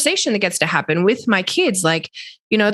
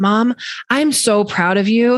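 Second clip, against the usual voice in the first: put-on child's happy crying voice. Mother retells her son's reply to her question, imitating a teary, happy voice. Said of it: "but also like teary, like so happy".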